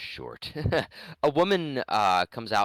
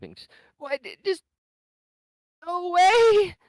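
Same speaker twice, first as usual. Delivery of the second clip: mock crying, much higher and louder; 8 dB louder than usual. Recounting a game scene, voicing a figure who wants to be left alone, imitating someone weeping. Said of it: "you hear some crying and weeping".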